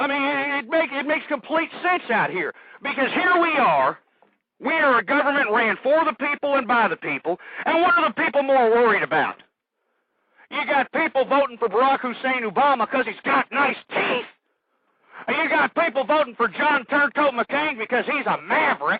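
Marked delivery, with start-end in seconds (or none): 2.8-19.0 agitated, angry, upset, flustered ranting. Ranting to callers about the election, admits sounding upset: flustered ranting. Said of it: "I'm getting a little, uh, upset".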